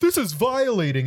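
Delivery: mock, very high, outraged screaming screech. Retelling a young guy who made a scene, imitating him screaming. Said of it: "and he's like screaming".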